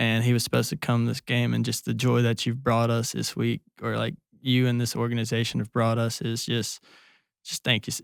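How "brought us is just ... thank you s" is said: ordinary talk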